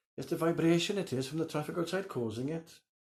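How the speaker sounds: put-on heavy Welsh accent, very high. Recalling what a woman said going up into the bedroom, in a strong welsh accent. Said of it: "with a strong Welsh accent".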